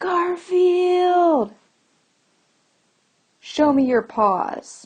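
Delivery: high, loud yell.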